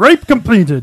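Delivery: loud strategy-game unit voice, announced. Repeating the joke line while being recorded, in an orc peon voice. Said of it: "Do the orc peon voice".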